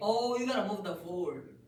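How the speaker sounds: very high, very loud, shrill excited shouting. Answering a math question about what to move first: yelling excitedly. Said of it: "why are you yelling?".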